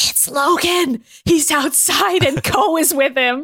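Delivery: slow, hushed, unhurried stage half-whisper. Retelling a scene where Hideki half-whispers to a napping Shingen; imitating Hideki half-whispering. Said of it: "Hideki like whispers to him".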